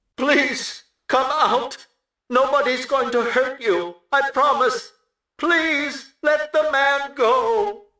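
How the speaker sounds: harsh, alien-like, very high, choked, pleading megaphone voice. A mother pleads over a megaphone for someone to come out; harsh megaphone voice. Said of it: "A choking sound".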